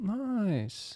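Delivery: nice very high and long drawn out. Quoting what Owen Wilson always says: Owen Wilson voice. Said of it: "What's that thing Owen Wilson always says?".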